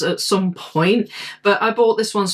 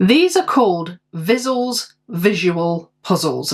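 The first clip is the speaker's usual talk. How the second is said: deliberately slow, slower pace. Reading a puzzle brand's name while opening parcels, saying it slowly. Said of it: "I have to say that slowly".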